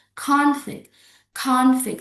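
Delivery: first-syllable stress on conflict. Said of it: "put the stress on the first syllables".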